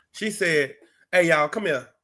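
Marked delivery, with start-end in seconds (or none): 1.1-1.8 put-on calling-out voice. Retelling a Bible scene of a mother calling the servants: imitating a mama calling out. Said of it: "just like a mama".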